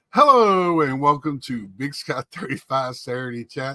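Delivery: loud, warm speech while cracking up laughing. Opening the Big Sky thirty-five Saturday Chat on a second try, laughing while talking. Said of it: "Sorry, I'm laughing".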